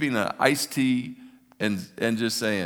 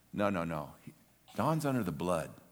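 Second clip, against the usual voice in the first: confidential, hushed stage whisper; 4 semitones lower, 8 dB quieter than usual. Acting out Jesus speaking to his Father: half-whispering as Jesus. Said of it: "Jesus would whisper to his Father".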